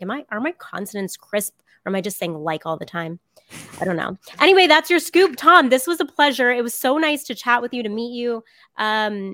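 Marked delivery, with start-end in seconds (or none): none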